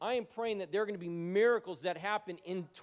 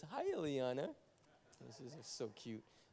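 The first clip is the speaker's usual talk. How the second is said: very hushed, soft, swooping words through laughter; 6 semitones lower, 11 dB quieter than usual. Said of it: "I'm laughing because".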